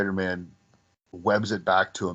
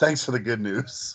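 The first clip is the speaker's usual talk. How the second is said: put-on gleeful delivery, relishing every word; 3 semitones higher than usual. Speaker recalls a favorite movie quote after Betty's intercom news: mock-gleeful delivery. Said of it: "He says it with such glee".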